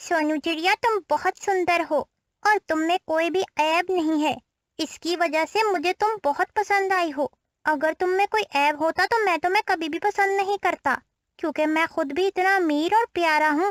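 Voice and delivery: smug, condescending, arrogant cartoon bird voice. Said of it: "[name] बहुत ज्यादा प्यारा था और वो बहुत अमीर भी था। इसी वजह से [name] बहुत ज्यादा घमंडी भी था। / [name] बहुत ज्यादा प्यारा था और वो बहुत अमीर भी था। इसी वजह से [name] बहुत ज्यादा घमंडी भी था। / [name]".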